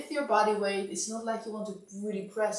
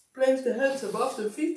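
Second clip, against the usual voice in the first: talking through a yawn; 4 semitones higher, 4 dB louder than usual. Instructor guiding listeners through a massage: yawning while speaking. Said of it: "Sorry, I'm yawning".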